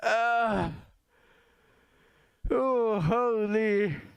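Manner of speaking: laughing hard while talking. Reacting to something funny, laughing hard while talking. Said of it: "making me laugh so bad".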